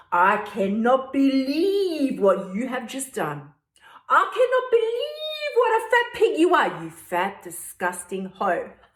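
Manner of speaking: mock scornful, contemptuous berating with swooping pitch. Describing the inner voice after eating a burger, acting out a berating inner voice. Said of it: "This is what my voice says to me anyway".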